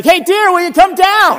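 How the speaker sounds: put-on very high-pitched, loud shout. Speaker retelling a woman calling to her husband in the attic, retelling a shout upstairs. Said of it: "She shouts out like that".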